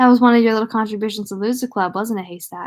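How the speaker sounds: usual speaking voice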